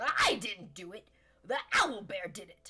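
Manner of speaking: loud, swooping, sing-song kobold creature voice. Running the game, the narrator voices a woken kobold being questioned; kobold voice. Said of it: "And the Kobold says".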